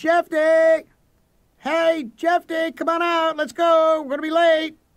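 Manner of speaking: very high, long, drawn-out, carrying shout. Reading a story, a character calls to a friend from the front walk: yelling. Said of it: "I cupped my hands around my mouth and I yelled".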